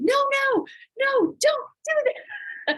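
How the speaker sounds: put-on very high, slow, drawn-out shriek. Retelling own reaction heard on the show video: imitating own scream. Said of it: "You can hear me on the video screaming".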